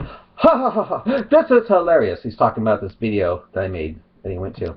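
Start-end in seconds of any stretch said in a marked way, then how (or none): 0.0-2.2 high, mocking, scornful cackle. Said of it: "And then he comes".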